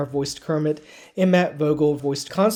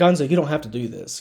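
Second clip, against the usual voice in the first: straightforward, direct, in-charge, take-charge delivery. Contrasting how the newer performer says the Kermit line: imitating a direct, take-charge Kermit. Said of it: "is more of a direct".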